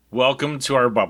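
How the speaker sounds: flat, unwelcoming tone. Joining in after the episode intro, welcoming everyone: flat, unwelcoming. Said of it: "that sounded welcoming".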